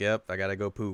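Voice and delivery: mock casual, offhand, nonchalant tone. Retelling how a character excuses himself from class: imitating a nonchalant remark. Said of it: "He just says it so nonchalantly".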